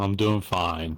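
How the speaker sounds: tired, weary voice. Answering a greeting from others: tired voice. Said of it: "You seem tired".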